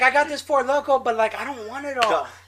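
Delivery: grating, high-pitched, put-on girlish voice. Retelling what a friend's girlfriend said by the beer pong table: annoying impression of a girl. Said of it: "Does she really sound like that?".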